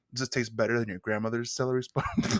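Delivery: seductive, flirtatious, suggestive come-on tone. Retelling a judge's question to a contestant: imitating Gail's seductive question. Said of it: "she says it like she wants to fuck him".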